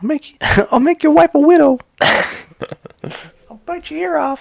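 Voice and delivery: squeaky, very high, slow, drawn-out, menacing voice. Joking about threats, doing a Mike Tyson impression. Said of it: "That's my Mike Tyson impression".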